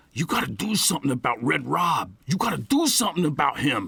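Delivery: put-on angry growl. Narrator reads an upset man confronting the narrator during a church meal: angry aggressive growl. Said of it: "he growled in an angry, aggressive tone".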